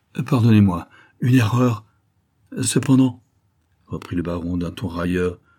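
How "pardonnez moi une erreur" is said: stammering, stuttering, louder. Narrator reading the petrified marquis apologizing to the baron, stammering.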